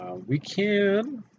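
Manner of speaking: voice breaks very high, drawn-out "can". Explaining where a guy would fit in the build, voice cracking. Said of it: "voice crack there".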